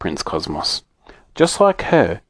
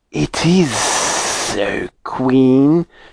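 very slow, drawn-out hissing voice. The pet astropython answers the queen, hissing. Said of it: "he hissed".

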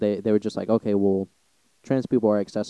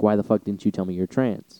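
mock indignant, angry, pissed-off outburst. Acting out a hypothetical guy from a bar confronting someone: imitating a pissed-off guy. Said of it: "he gets all pissed off and shit".

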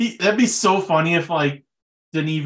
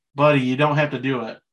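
normal talking voice

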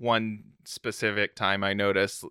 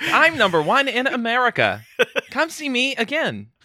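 robotic voice; 7 dB louder than usual. Speaker imagines the voice an ad should have used, in TikTok text-to-speech lady voice. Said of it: "gotten the TikTok text-to-speech lady to do the voice".

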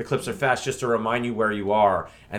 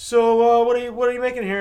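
put-on condescending judge voice, higher and louder; 13 semitones higher, 8 dB louder than usual. Retelling how the chef responds to a contestant: imitating Colicchio's condescending tone. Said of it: "like it's so beneath him".

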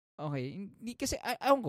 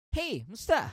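bright, pitched-up, outgoing, chummy voice; 5 semitones higher, 3 dB louder than usual. Explaining being socially awkward, imitating an outgoing extrovert. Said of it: "An extrovert".

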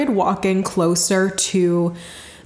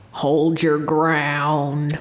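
deep Southern drawl, ground stretched out; 5 semitones lower than usual. Retelling a voice heard after asking what to do: deep southern voice. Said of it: "this deep Southern voice that just goes".

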